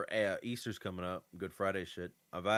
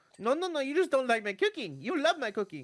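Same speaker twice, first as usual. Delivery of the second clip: put-on very high, sing-song, swooping Italian grandma voice; 8 dB louder than usual. Retelling a grandma who feeds you foods you can't eat anyway: Italian grandma impression. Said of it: "you're using your uh, impression".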